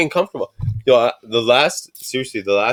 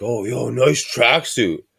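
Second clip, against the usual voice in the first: slow, drawn-out, mocking sarcastic tone. Retelling what people at a steakhouse said: imitating a sarcastic remark. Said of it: "Like, sarcastically".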